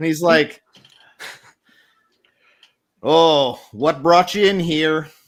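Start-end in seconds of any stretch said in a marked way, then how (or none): 3.0-5.0 loud New England drawl, slow at the end. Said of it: "It's a New Englandy thing".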